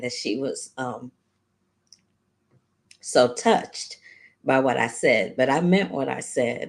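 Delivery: choked-up voice on the edge of crying. Recalling how touched the other speaker was: close to tears. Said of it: "I'm about to cry again".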